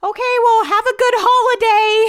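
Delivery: sweet, tiny, cutest little voice, very high. Retelling what the woman on the call said at the end, cute little voice. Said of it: "had the cutest little voice".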